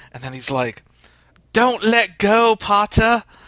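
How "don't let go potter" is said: clumsy, bad, put-on British accent, very high. Retelling teens quoting Harry Potter: imitating a bad fake British accent. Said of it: "worse British accents than I just had".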